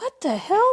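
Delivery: gently anxious, concerned and worried. Retelling how Ronald reacted onstage, imitating Ronald's concerned voice. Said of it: "he's like concerned".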